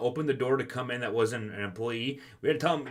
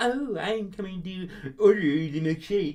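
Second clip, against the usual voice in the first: silly, exaggerated, goofy put-on voice, pitched up; 6 semitones higher than usual. Mocking customers who come in with an exaggerated attitude: imitating a customer's goofy voice. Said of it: "this goofy fucking voice".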